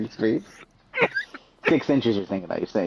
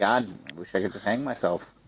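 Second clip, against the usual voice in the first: ordinary talk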